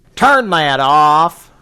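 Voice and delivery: booming, very loud, scolding fatherly voice. Repeating the scolding line as a dad would say it: imitating dad. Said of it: "As my dad would say".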